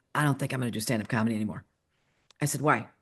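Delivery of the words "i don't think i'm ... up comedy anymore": dead flat, very deep, quiet deadpan voice. A mother retelling her daughter talking about quitting stand-up, really deep voice. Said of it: "really deep voice".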